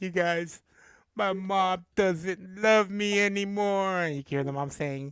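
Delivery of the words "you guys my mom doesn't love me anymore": put-on weepy, tearful, high, drawn-out crying. Retelling a meme of a girl complaining about her mom: imitating a girl crying. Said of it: "She's crying".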